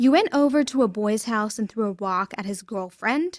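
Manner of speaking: ordinary delivery, nothing marked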